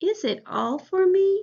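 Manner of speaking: pitch climbing up on the last word me. Modeling a question for learners to repeat, rising at the end. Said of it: "raise our voice right at the end".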